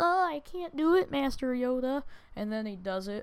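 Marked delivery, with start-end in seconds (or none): 0.0-2.0 high, mocking, weak little sissy voice. Mocking a character as an annoying sissy: mocking sissy Luke Skywalker voice. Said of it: "the most annoying little frickin' sissy on earth. He's like".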